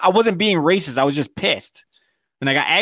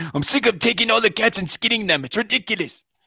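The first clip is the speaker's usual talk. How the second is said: mock frustrated, heated angry complaining, pitched up; 6 semitones higher than usual. Acting out an imagined argument between cooks: imitating someone arguing angrily. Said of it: "Could you see the argument?".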